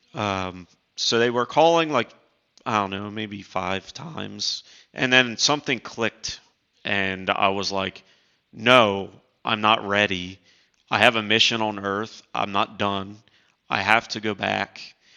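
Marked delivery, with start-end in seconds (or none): none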